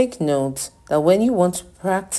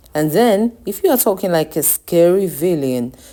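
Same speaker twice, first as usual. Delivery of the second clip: usual speaking voice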